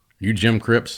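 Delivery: imitated stern voice. Retelling a man coming over to question him, imitating a stern voice. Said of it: "in a stern voice".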